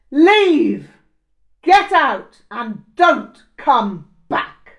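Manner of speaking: immense, very loud, high-pitched shout. Narrator reading a character who suddenly orders the storyteller out, shouting with immense volume. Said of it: "he shouted with immense volume".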